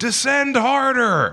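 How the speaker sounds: mock shrill repeated scream, very high. Recounting sitting in the front row on opening night, retelling screaming. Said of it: "kept screaming".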